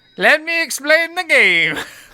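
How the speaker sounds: wandering European accent. Explaining a game to another speaker: confused European accent. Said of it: "A very confused European accent".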